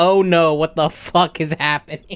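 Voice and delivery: ordinary delivery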